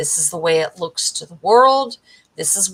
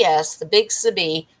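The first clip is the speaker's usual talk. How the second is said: ordinary delivery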